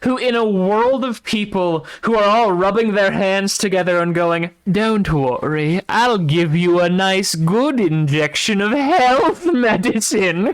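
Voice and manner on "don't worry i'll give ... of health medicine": sinister, scheming, cackling put-on villain voice. Imitating people rubbing their hands together, in a put-on evil voice. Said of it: "that is explicitly his evil voice".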